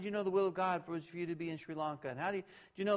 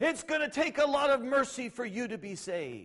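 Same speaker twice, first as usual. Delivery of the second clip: high, loud megaphone-like yell, acted; 6 semitones higher, 5 dB louder than usual. Retelling what a man said through his megaphone, imitating him yelling.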